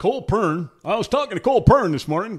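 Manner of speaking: loud, high race-broadcaster voice. Imitating how a broadcaster says a driver's name: Darrell Waltrip impression. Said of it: "to hear Darrell Waltrip going".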